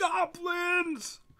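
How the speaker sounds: piercing, very high scream. Voicing the guy in the booth who points at the party: screaming. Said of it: "he points at you and screams".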